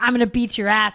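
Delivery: mock banshee scream, loud and furious. Retelling how a woman burst into the shop threatening the women there, retelling a furious scream. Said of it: "she's like a banshee".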